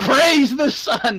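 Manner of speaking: very high-pitched, loud hollered yell. Declaring a character's action in a game: yelling in character. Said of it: "I'm gonna just gonna yell".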